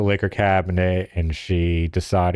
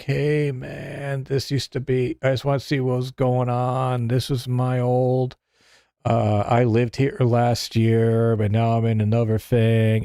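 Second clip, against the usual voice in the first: mock drunk rambling, pitched higher; 5 semitones higher than usual. Retelling a late-night knock at the door: imitating a drunk guy rambling. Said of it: "This guy's piss-ass drunk".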